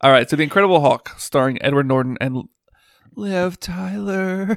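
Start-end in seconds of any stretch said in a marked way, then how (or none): 3.1-4.6 put-on voice, long lingering drawl. Introducing the movie being discussed in a Liv Tyler impression. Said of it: "That's my best Liv".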